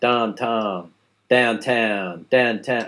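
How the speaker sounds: Pittsburgh vowel in both syllables of "downtown". Explaining how Pittsburghers say the vowel in town, demonstrating a Pittsburgh accent. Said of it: "people from Pittsburgh pronounce the vowel sound in town like town".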